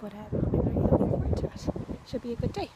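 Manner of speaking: soft, hushed, quiet talking. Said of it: "so I'm talking kinda quietly".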